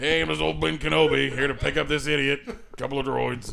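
put-on Philadelphia teamster accent, laid on heavy. Repeating another speaker's Ben Kenobi line: Philly teamster voice. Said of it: "like a Philly teamster".

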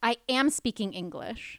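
loud, mock affronted, indignant tone in perfect English. Retelling a bar customer's reply: imitating someone speaking indignantly. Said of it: "she looks at me so indignant".

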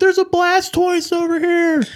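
put-on very high, drawn-out yell. Retelling crowds hunting Pokemon downtown at night: imitating people yelling. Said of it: "There's just people yelling".

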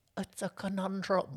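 put-on eerie, high, creepy little child's voice. Retelling a kid's line from the show: imitating a creepy kid voice. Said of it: "Or however creepy kid voice he's got".

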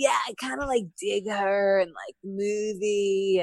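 slow, easygoing, relaxed laid-back delivery. Retelling how her husband talked about liking her: impression of her husband's laid-back way of talking. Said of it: "that's my impression of it".

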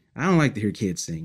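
ordinary talk, nothing marked

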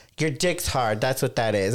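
plain

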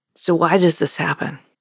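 plain

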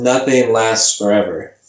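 usual speaking voice

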